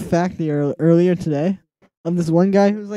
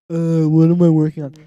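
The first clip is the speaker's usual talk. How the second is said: put-on deliberately obnoxious voice; 3 dB louder than usual. A streamer acting out their past self on stream, in an obnoxious put-on voice. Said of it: "I don't know why I did that voice".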